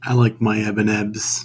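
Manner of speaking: utterly glum, deflated, saddest downbeat voice. Riffing on a running joke, in the saddest, most downbeat voice. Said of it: "You said that in the saddest, most down".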